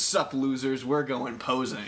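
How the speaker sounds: ordinary talk, nothing marked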